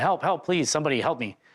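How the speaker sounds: put-on urgent, mild crying out. Recounting an incident with pedestrians nearby, retelling a yell for help. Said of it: "I had to then yell for help".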